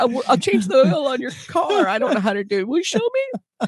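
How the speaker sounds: put-on crying, high and tearful, begging. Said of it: "I remember crying, going to my dad and going".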